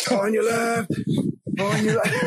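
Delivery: loud, high-pitched yell.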